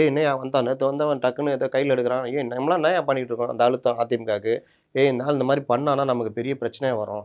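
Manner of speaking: plain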